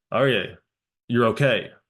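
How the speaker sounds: no-nonsense firm tone. Retelling how the speaker spoke to someone crying: retelling a firm command. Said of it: "so I very firmly said".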